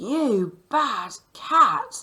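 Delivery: very loud, angry, cross scolding. Reading aloud a quoted line ending in an exclamation mark, angry exclamation. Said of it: "I knew to say it like that because there was an exclamation mark, which means she's angry".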